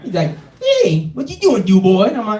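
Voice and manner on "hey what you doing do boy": put-on voice of a pack-a-day smoker. Imitating a coworker who smokes menthols: Water Boy voice. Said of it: "it kinda sounded like the Water Boy".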